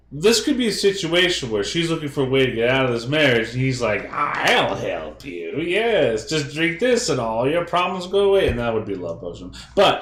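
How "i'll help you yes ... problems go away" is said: silly, high, slow put-on gnome voice. Imagining a gnome offering a woman a way out of her marriage, gnome voice. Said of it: "not all gnomes talk like that".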